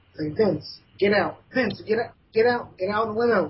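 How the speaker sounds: put-on frantic shouting. Recalling watching the limo explode on tv, retelling yelling at the tv. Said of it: "yelling like yelling at my T V".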